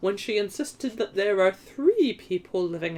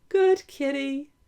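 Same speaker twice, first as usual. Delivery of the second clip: well-controlled falsetto, much higher pitch; 6 semitones higher than usual. The great detective speaks to the cat at the back door, in a well-controlled falsetto. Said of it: "in a well-controlled falsetto".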